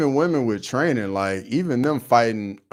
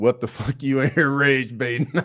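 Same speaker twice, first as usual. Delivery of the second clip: put-on Scottish accent; 2 semitones higher than usual. Watching a football game, quoting someone in his Scottish accent. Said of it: "In his Scottish accent".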